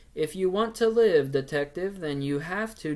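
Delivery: flat monotone, like reading lines off a page. Criticizing a movie's voice work, demonstrating how it sounded: flat, read-off-paper delivery. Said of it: "sounded like someone had a piece of paper and they were just reading it".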